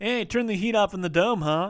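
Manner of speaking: mock smug wisecracking tone. Retelling what people come up and say: imitating a smug one-liner. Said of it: "the smug kind of one-liner where they come up and they're like".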